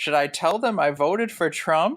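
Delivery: deliberately audible, pointed, provocative aside. Retelling what a woman behind them said: imitating a loud remark. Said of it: "the woman just loudly says".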